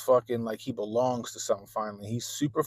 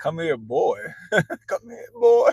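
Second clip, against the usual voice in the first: put-on calling voice, higher and louder; 8 semitones higher, 7 dB louder than usual. Retelling a son calling after a kid: imitating son sounding like a slave catcher. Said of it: "that shit sounded like he was a goddamn slave catcher".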